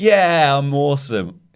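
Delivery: loud, high, smug, cocky swaggering boast. Retelling a wrestler's character work before a match: imitating a cocky Roderick Strong. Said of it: "then he goes back to being really cocky".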